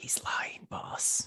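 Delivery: theatrical whisper that carries. Voicing a character who leans over to warn the boss: loud stage whisper. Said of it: "just whispers".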